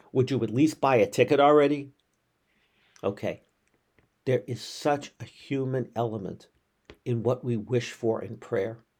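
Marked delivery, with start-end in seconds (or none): 0.2-1.9 thundering, booming voice from the heavens. Telling a joke, the speaker voices God answering the praying man, thundering voice of God. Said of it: "there's this thundering voice that comes out of the heavens".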